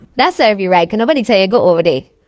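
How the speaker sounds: loud, scolding voice with Caribbean accent.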